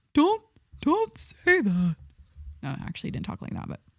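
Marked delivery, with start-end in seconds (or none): 0.1-1.9 very slow, high character voice, each word dragged out. Act out him objecting to your inappropriate joke, in an Ed Gein voice. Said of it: "Ed Gein voice".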